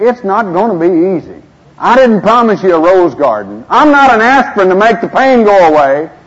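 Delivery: loud, high, stern preacher-style proclaiming voice.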